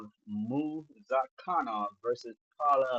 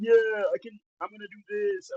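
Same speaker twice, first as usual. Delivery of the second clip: high, brash, cocky boasting voice; 8 semitones higher, 4 dB louder than usual. Mocking how new prospects talk when they come along: imitating a new prospect. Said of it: "these new prospects come, come along and go like".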